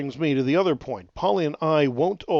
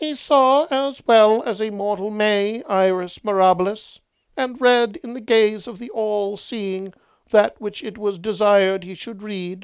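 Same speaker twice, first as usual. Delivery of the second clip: robotic, halting, stiff, jerky, high-pitched voice; 7 semitones higher, 4 dB louder than usual. The bear answers the questioner, in a mechanical, jerky, high-pitched voice. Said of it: "spoke in its mechanical, jerky, high-pitched voice".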